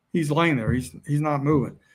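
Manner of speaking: ordinary talk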